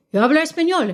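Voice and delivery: Spanish accent from Barcelona. Showing that the speaker speaks Spanish: Spanish accent from Barcelona. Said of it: "I can speak Spanish with a Spanish accent".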